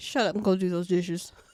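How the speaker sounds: put-on mock scolding tone. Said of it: "my mom's like".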